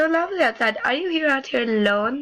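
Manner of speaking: attempted, put-on Italian accent. Voicing a character greeting a miss outside: attempted italian accent. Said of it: "I will attempt to do it".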